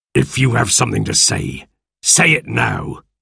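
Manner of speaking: icy, cold, unfriendly tone. Narrator reading the captain's reply to Silver, said coldly. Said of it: "said the captain coldly".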